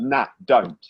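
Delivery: plain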